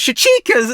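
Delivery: voice cracking, breaking very high in pitch. Explaining a character's arc in a story, voice cracking. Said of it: "Oh god, voice crack".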